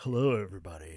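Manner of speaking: very low, polished AM radio announcer voice. Answering an imitation of himself by showing an AM radio announcer voice. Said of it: "That sounds like an A M announcer".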